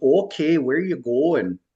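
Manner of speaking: put-on heavy, high Minnesota accent. Retelling what the shuttle driver asked them: heavy Minnesota accent. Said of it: "a really heavy Minnesota accent".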